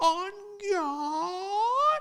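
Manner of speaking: put-on very high, shrill old-man voice, "God" drawn out. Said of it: "with the cigarette hanging out of".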